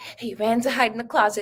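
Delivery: ordinary delivery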